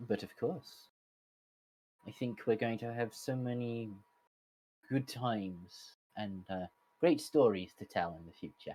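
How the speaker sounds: soft, sad Irish lilt. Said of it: "I can hear the sadness in your voice".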